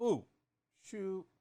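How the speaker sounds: bu with falling fourth tone, shu with high level first tone. Repeating a term from a dictionary, fourth tone on bu, first on shu. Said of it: "that's fourth tone and, and first tone".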